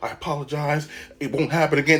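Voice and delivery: put-on panicked voice. Retelling a teacher apologizing while held against a wall: imitating someone panicking.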